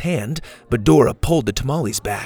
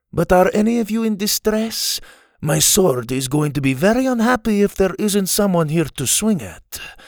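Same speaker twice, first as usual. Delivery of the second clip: put-on Spanish accent, pitched slightly higher; 6 semitones higher than usual. Narrator reads a swordsman interrupting a group, in Inigo Montoya's Spanish accent. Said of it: "interrupted in his Spanish accent".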